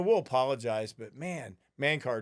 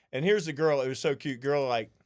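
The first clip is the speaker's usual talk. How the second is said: normal talking voice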